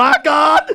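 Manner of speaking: fake out-of-breath panting. Retelling how Bridget announced more birthdays: imitating Bridget panting breathlessly. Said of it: "panting and breathlessly telling me".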